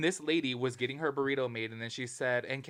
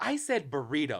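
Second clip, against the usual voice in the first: sharp, snappy, snapped delivery; 2 semitones higher than usual. Retelling what a woman snapped back at a man, retelling a snappy retort. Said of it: "And she snapped on him".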